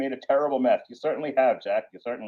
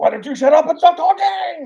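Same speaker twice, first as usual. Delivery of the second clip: fake anime character screaming, higher and louder; 6 dB louder than usual. Mocking how anime characters talk, yelling at the camera.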